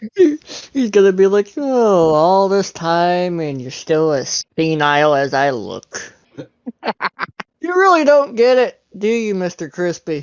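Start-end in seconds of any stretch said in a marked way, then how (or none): 1.6-10.2 words spilling out through laughter. Voicing Alistair as he answers Mister Crispy, Alistair laughing while talking. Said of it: "He's kind of laughing when he says".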